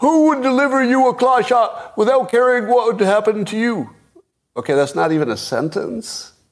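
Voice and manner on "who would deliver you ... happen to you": very high, loud, mock all-caps yelling. Reading out someone's written words, shouting like all caps. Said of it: "So I'm going to say it like all caps".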